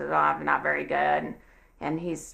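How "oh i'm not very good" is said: mock down-and-out tone, lower. Retelling a customer's answer to the cashier: imitating a downcast customer. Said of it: "he's just down and out".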